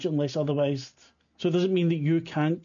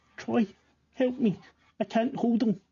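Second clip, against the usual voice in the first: put-on high little boy's voice, calling out; 6 semitones higher than usual. A game master voices a telepathic message to a player in a little boy's voice. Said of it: "it's a little boy's voice saying".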